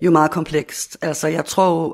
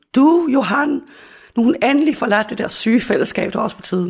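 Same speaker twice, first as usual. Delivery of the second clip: high shout, calling out at a distance; 7 semitones higher, 4 dB louder than usual. Retelling shouting to their father out in the kitchen, retelling a shout to the kitchen. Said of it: "Og så råber jeg nu til min far".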